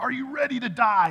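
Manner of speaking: high, loud scream. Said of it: "screamed it out".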